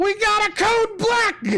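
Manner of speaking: shrill, very high, alarmed yell. Telling a story where a cultist yells out to the others: retelling a yelled alarm. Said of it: "And he yells out".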